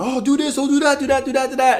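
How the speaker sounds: put-on very high, pushy, nagging yelling. Retelling how parents at a three-year-old's soccer yell instructions: imitating parents yelling. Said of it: "these parents out there yelling".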